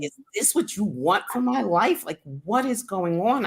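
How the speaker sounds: mock despairing, high, desperate cry. Speaker recalling a day of depression, retelling a scream at God. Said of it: "I literally one day was screaming at God".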